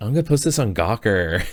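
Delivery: put-on loud, catty, total Valley Girl voice. Retelling a passenger bitching at her Lyft driver, in a Valley Girl voice. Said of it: "total like you know Valley Girl voice".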